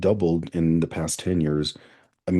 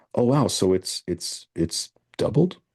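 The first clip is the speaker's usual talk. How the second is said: hesitant, puzzled, slow, confused, unsure; 3 semitones higher than usual. Demonstrating asking as a question instead of asserting, confused, unsure questioning. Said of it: "asking it in the form of a question and being confused".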